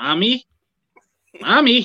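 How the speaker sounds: high, loud, childish kids' cartoon voice. Mocking how another man says the word, in a Sesame Street voice. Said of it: "He sounds like he's on the set of Sesame Street when he says it".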